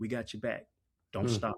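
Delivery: quiet whisper. Retelling what independent voters tell them in the grocery store: imitating someone whispering. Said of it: "quietly whispering".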